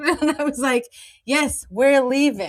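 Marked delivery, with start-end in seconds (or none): 1.2-2.5 acted very angry, short-tempered, curt and cutting. Recalling answering a librarian while carrying a toddler to the door: retelling an angry reply. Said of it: "I said it in a very angry way".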